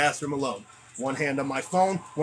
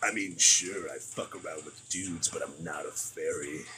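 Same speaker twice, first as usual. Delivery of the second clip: very low, deep, put-on cartoon-monster voice; 10 semitones lower, 7 dB quieter than usual. Doing a Big Mouth character bit: Hormone Monster voice. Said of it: "I got Big Mouth for the hormone monster".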